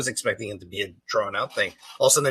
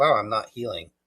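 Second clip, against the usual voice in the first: ordinary talk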